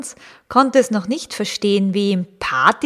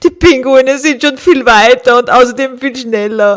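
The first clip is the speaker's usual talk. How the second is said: very loud, sad, self-pitying, grumbling tone; 4 semitones higher, 9 dB louder than usual. The walrus, falling behind the penguins, complains. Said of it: "beklagte er sich".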